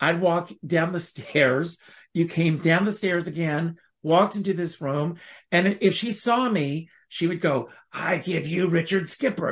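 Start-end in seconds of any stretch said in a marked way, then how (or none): 7.9-9.5 put-on gravelly, raspy voice. Retelling how the pianist greeted him when he walked in, imitating a gravelly voice. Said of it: "She had this gravelly voice".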